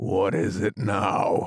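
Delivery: low, deep, husky, hoarse whisper. A narrator reads the frog's question to Alice, in a deep, hoarse whisper. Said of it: "the frog said in a deep, hoarse whisper".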